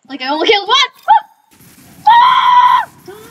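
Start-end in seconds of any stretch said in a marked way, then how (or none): 2.0-2.9 high, loud scream. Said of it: "Stop screaming".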